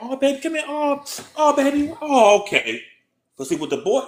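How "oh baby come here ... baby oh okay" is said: very high, slow, soothing motherly coo. Retelling how mothers treat a crying girl: imitating a mother comforting a girl. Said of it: "she get her".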